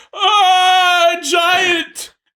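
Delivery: very high, very loud, shrill, drawn-out panicked scream. Voicing a tiny townsperson spotting a giant: acted screaming. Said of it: "they all start screaming".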